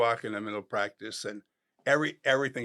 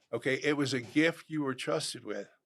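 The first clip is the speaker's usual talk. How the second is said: ordinary delivery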